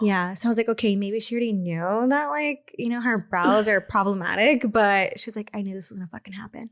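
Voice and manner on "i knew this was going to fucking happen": whisper, much quieter, faster. Retelling what a woman whispered to her sister; retelling a whisper. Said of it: "I heard her like whisper to her sister".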